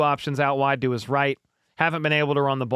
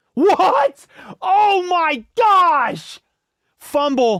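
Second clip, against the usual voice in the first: shrill, long, very high yell into the mic; 7 dB louder than usual. Reacting to a fumble during the play: screaming into the mic. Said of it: "I just screamed into the mic".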